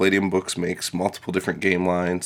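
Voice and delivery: ordinary delivery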